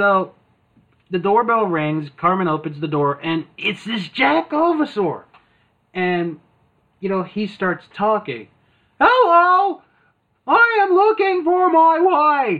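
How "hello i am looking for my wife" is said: very high, slow, drawn-out, annoying voice. Retelling a South Park episode, the speaker voices the creature at Cartman's door: annoying Jakovasaur voice. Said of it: "the most annoying phone voice in the world".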